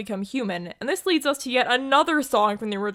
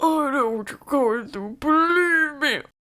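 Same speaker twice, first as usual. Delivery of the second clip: put-on elderly ninety-year-old man's voice; 4 semitones higher than usual. In the remake, the villain speaks to the heroine, sounding like a 90-year-old man. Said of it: "Why do you sound like a 90-year-old man".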